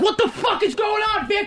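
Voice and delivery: acted-out yelling. Showing how one would yell at her while throwing something: acting out own yelling. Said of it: "how would you be yelling at her".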